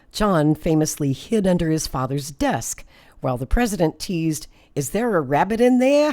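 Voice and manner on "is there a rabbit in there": clumsy put-on Boston accent, pitched up. Narrating how the president teased his son under the desk, in a bad Boston accent. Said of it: "I do a bad Boston accent".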